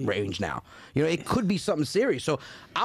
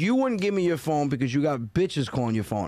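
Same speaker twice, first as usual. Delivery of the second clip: ordinary talk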